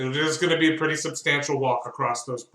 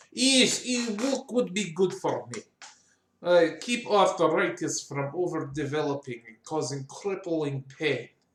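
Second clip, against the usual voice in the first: put-on Russian accent. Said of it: "Was he always Russian?".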